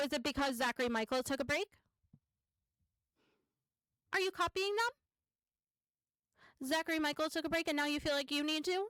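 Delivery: pointed, teasing, needling sarcasm. Reacting to a clip of someone announcing a YouTube break: sarcastic. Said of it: "Please note my sarcasm".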